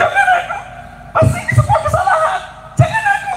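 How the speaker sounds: very high, panicked woman's shriek.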